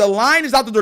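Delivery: ordinary delivery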